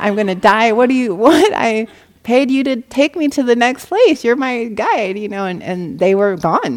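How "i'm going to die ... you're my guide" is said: high, loud, sobbing crying scream. Retelling a woman left behind by her guide, imitating someone crying and screaming. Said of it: "she just went into like crying, screaming".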